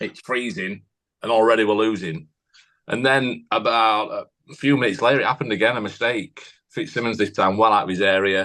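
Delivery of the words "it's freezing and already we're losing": usual speaking voice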